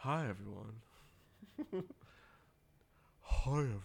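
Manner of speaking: put-on husky voice. Opening the podcast episode by greeting listeners; put-on husky voice. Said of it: "talking in a husky voice".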